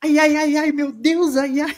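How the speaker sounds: very high, drawn-out woman's falsetto voice. Retelling a TV scene where one character mocks another: imitating Dona Florinda. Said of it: "imitando a dona Florinda".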